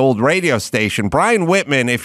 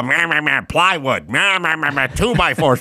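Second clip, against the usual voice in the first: mocking voice, slower; 4 semitones higher than usual. Speaker mimics how people imitate him, mocking impression of himself. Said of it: "people do an impression of me".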